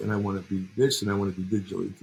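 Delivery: ordinary talk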